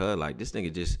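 soft, low, annoyed and dismissive aside. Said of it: "and then Hollow's like".

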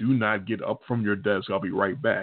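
put-on, very stern teacher voice. Retelling a teacher's warning before she leaves the room: imitating a teacher speaking very sternly. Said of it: "very sternly".

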